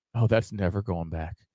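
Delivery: very low, very quiet mumble under the breath. Imagining being a doctor at a birth, just loud enough for her to hear; muttering under breath. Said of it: "muttering under my breath".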